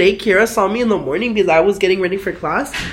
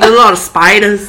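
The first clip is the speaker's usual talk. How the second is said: put-on very loud, shouted Australian accent; 8 dB louder than usual. Retelling how a guy from Australia said the name: imitating an Australian accent. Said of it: "that fucking accent".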